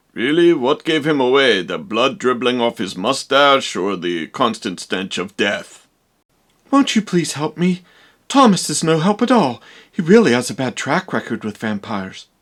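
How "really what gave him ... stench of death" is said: put-on dry, low, sarcastic old professor voice. The Professor answers the young woman who suspects Count Orlock, old vampire hunter professor voice. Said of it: "It's just that you look more like a mad scientist vampire hunter type. / [name]. / boring old man stuff".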